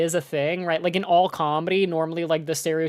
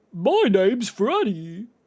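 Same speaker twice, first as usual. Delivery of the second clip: quirky, odd, weird, swooping, sing-song character voice; 3 semitones higher than usual. Showing how a character's voice should sound, in a weird Freddy voice. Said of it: "a little bit like this".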